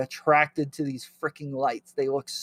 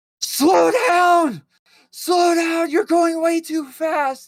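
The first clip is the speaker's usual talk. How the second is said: put-on very high, loud, frantic, drawn-out panicked scream; 6 dB louder than usual. Speaker retells riding in the back of a car with others, reenacting own screaming. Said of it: "I start like screaming".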